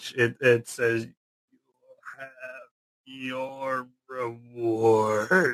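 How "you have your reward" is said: slow, strange, eerie, inhuman parody of speech. Voicing a creature that stops laughing and speaks: strange parody of human speech. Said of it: "this strange parody of human speech".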